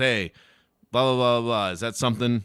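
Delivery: put-on very loud, expressionless deadpan. Describing how a comedian tests new jokes, the speaker acts out his pitch, retelling a deadpan delivery. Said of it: "He'll do all of his new material completely deadpan".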